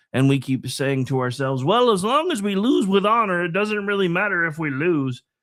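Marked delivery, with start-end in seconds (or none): 1.6-5.2 put-on, silly, goofy high voice. Quoting what we keep saying to ourselves, in a silly Kermit the Frog-like voice. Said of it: "I sound like Kermit the Frog when I do that. It's supposed to sound like stupid liberal".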